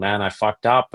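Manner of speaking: put-on near-tearful voice. Retelling a phone call after injuring a pet snake, retelling being near tears. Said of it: "I was almost crying".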